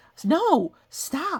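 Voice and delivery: ordinary talk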